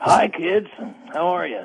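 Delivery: just-woken groggy voice. Calling in to the others very early in the morning: groggy just-woken voice. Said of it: "what's up with the voice?".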